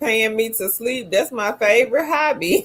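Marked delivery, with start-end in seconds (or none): none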